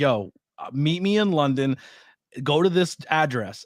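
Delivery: ordinary talk, nothing marked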